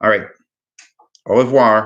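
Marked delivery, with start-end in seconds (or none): 1.3-1.9 French "au revoir" spoken with American twang. Wrapping up a meeting, the speaker says a french goodbye with a little american accent. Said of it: "my little American accent on the French there".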